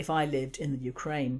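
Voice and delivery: plain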